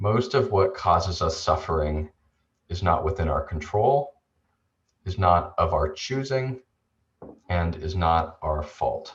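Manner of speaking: measured, slow, deliberate reading, each clause spaced. A presenter reads a key idea aloud, asking the audience to take it in, reading slowly. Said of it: "I'll read this slowly".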